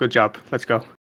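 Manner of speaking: hushed, quiet stage half-whisper. Praising a rat quietly in character: half-whispering. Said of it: "I'm gonna whisper".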